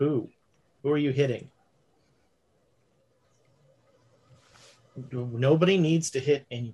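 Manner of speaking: quiet calm voice. Retelling how a man stopped a threatened fight, speaking very quietly and calmly. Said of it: "he's speaking very quietly and very calmly".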